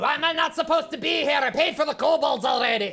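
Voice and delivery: full-on angry shouting, high and heated. In a role-play scene, a character told they can't be here answers: yelling. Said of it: "Can you stop yelling?".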